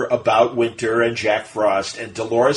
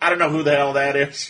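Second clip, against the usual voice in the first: senile, clueless comedian voice; 3 semitones higher than usual. Retelling a story of showing off photos of presidents: imitating senile Bob Hope. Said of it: "senile Bob Hope".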